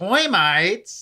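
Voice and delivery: surprised, high-pitched, blurted cartoon sailor voice. Telling how a running joke with a friend gets repeated: Popeye voice. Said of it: "'cause you know his voice".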